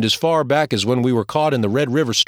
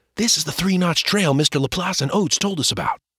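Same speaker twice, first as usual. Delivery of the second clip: stage half-whisper, pitch raised a little; 5 semitones higher than usual. Reading the narrator speaking to his brother on a forest trail, half-whispered. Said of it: "I whispered".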